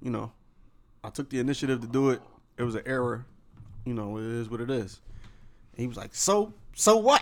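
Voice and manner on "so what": put-on voice, pitched very high.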